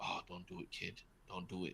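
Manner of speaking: hushed whisper under the breath. Speaker retells a film scene, whispering like Bradley Cooper's character. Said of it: "whispering to himself like".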